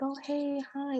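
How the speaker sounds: put-on sweet voice. Retelling how guys talked after a hair change: imitating sweet, nice greeting. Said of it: "all sweet and nice".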